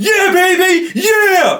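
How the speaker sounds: acted, very high, shrieking celebratory scream. Retelling how a poker player stood up and cheered: Scotty Nguyen screaming in celebration. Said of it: "he starts screaming at me".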